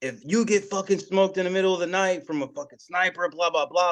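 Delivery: mock, high-pitched, furious tirade, really going off. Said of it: "dude's just getting, going off".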